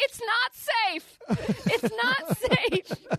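acted, very high, very slow, drawn-out yell. Retelling how he was forced blindfolded into a stairwell: imitating Bennett yelling. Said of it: "he just kept yelling".

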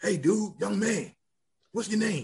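genuinely raspy voice from the throat. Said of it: "his voice was real raspy".

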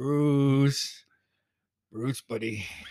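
put-on drunk speaking voice. Retelling how a drunk friend called out: imitating a drunk friend. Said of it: "Terrence was so drunk".

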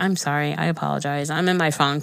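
plain

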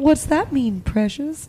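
put-on creepy voice. Imitating how a friend says "precious" to them: imitating someone in a creepy voice. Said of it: "That sounded really creepy".

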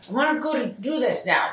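high, grumpy, slightly robotic little voice. Describing how he talks, speaker acts out his words in a mock-grumpy little voice. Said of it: "this like little grumpy like".

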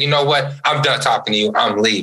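plain

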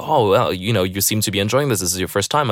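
ordinary talk

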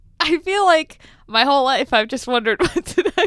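giggling and laughing through the words. Explaining a lifelong question to another speaker, laughing while talking. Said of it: "I can't stop laughing".

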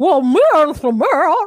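high, loud, drawn-out turkey caricature voice. Showing how others imitate her: turkey-like imitation of Jenny. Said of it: "a sound of a turkey".

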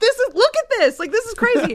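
put-on very high, shrill and loud yelling. Retelling yelling at staff in a property clerk office, retelling own yelling. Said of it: "I'm like yelling at them".

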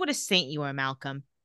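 sarcastic tone. Recapping a scene, quoting one character's reply to another, reading a line sarcastically.

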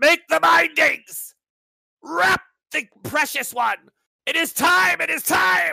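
high, shrill, slow, rasping, creaky fanatical intoning. Voicing unseen fanatics heard through a door: voicing fanatics. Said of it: "fanatics of some sort".

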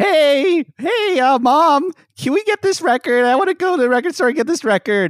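put-on very high little-kid voice. Acting out Jonathan asking his mom for a record: imitating Jonathan as a kid, high-pitched. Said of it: "here's my impression of, uh, Jonathan asking his mom".

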